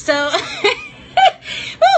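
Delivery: very high nervous laughing with a whooping woo.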